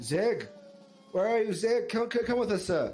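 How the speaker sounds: magically amplified voice calling out over noise. Player character calling for zig through a thickening crowd, in a booming magical voice. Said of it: "you using Thermagy booming voice".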